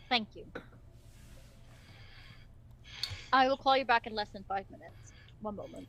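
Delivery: deep, gentle masculine voice. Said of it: "You hear a very deep masculine tone".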